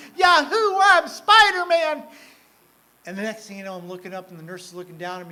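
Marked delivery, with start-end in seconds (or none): 0.2-2.0 very high, very loud, shrill screaming whoop. Telling of being given fentanyl and ketamine, retelling own screaming. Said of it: "I'm screaming".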